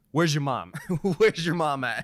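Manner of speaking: loud, in-your-face taunting tone. Retelling getting up over the monitor into opponents' faces: imitating Nick Merckx trash talking. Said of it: "And just trash talk and be like".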